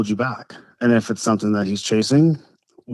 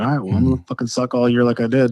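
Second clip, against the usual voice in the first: put-on angry, pissed-off voice. Retelling own reaction to being refused the old chassis: imitating being pissed off. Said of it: "And I was, like, pissed".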